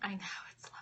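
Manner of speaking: soft, quiet whisper under the breath.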